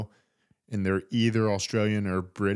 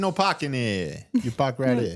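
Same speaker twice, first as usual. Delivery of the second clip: put-on Boston accent, higher; 4 semitones higher, 3 dB louder than usual. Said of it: "used the Boston accent".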